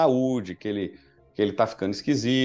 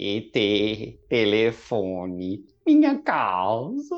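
strange, swooping alien voice, dubbed-sounding; 3 semitones lower than usual. Recalling the Portuguese dub's classic line, in a weird E.T. dub voice. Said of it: "dublado com a voz esquisita pra caramba".

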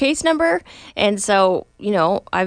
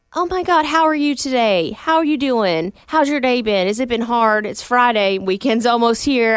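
put-on Southern accent, gushing, overly nice sweetness; 2 semitones higher than usual. Speaker shows how she greets people overly nicely, in her put-on southern voice. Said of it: "I'll do my southern voice".

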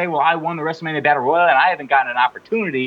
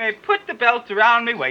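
put-on high-pitched, prim British accent; 6 semitones higher than usual. Mocking another speaker's impression of a woman's promo, in a Mary Poppins-style British accent. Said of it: "Mary Poppins".

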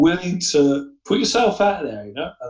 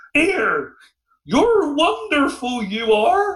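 put-on toothless old-woman voice, much higher; 12 semitones higher than usual. Retelling what an old woman said to a man, in a toothless old woman's voice. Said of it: "in a very old way".

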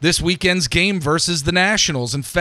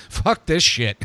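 fed-up, giving-up, exasperated outburst. Acting out giving up on the pitching staff: throwing hands up in exasperation. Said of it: "I'm throwing my hands up at this point".

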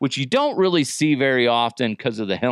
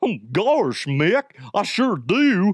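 poor high cartoon dog voice, sing-song; 6 semitones higher than usual. Imagining a cartoon version of a comic, the speaker voices Goofy answering Mickey. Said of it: "I am not good at Mickey Mouse and Goofy".

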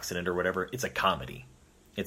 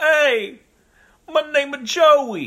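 put-on bro-like ghost voice, higher and louder; 14 dB louder than usual. Joking about a ghost who says its name: bro-y ghost Joey voice. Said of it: "bro-y ghost".

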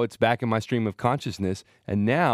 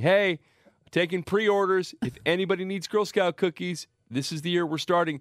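high-pitched yell calling out, announcer-like; 7 semitones higher than usual. Recounting going upstairs at work to take pre-orders, retelling a yell. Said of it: "I just started yelling".

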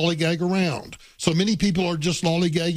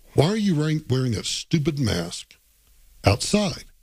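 muttering under breath; 2 semitones lower than usual. Retelling own remark about a passerby's mask: imitating own muttering under breath. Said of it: "my first thought under my breath was".

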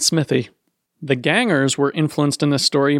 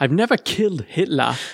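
bad put-on Scottish accent; 2 semitones higher than usual. Answering a joke about killing Hitler: awful Peter Capaldi impression. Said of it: "my awful Peter Capaldi impression".

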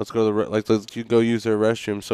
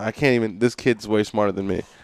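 ordinary talk, nothing marked

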